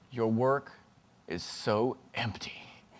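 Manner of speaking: quiet, slow whispering. Retelling an older illustrator's remark at a talk: imitating someone whispering. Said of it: "he whispers over to me".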